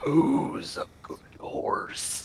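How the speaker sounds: very slow, soft, breathy, whispered grumbling murmur. Offering a horse a carrot and reaching out to it, in a soft grumble. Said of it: "kind of a softer voice".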